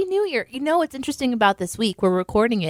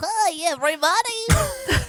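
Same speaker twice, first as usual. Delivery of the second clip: squeaky, very high hand-puppet voice; 13 semitones higher than usual. Greeting everybody through a hand puppet: hand puppet voice. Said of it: "It's just a voice".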